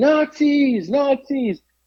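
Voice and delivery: very high-pitched screaming. Retelling a man with a Bible in packed downtown Atlanta: imitating a man screaming. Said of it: "And he's like screaming".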